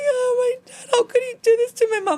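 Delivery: put-on crying. Retelling walking in after seeing her dad: imitating her own crying. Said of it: "So I went in and I was crying".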